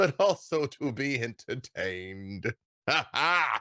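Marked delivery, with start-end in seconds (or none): 2.9-3.6 short, high, pitched-up amused ha-ha laugh. Voicing a god who laughs at the tongue-tied party: booming laugh. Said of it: "And his laugh sort of, like, booms".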